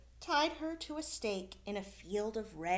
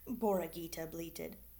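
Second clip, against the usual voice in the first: ordinary delivery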